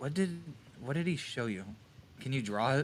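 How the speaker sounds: soft, hushed half-whisper. Walking up to a character in the game to ask quietly: half-whispering. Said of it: "whisper to him".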